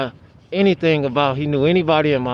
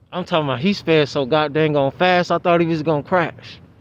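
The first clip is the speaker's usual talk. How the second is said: ordinary talk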